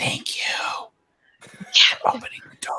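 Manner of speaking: hushed, covert, secretive whisper. Patting another character five times on the shoulder, whispering. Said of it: "I'm whispering".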